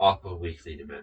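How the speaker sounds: ordinary delivery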